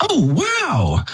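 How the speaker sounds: put-on very high little toddler voice. Retelling a toddler interrupting a sermon pause: imitating a toddler piping up. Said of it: "he just pipes up and he goes".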